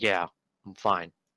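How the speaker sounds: dismissive scoff. Voicing a character who spits on the ground and answers: scoffing. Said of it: "scoffs and spits on the ground".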